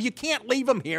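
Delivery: put-on loud yelling. Retelling a street chase, the speaker reenacts yelling at the cab driver. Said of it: "I'm yelling at the cab driver".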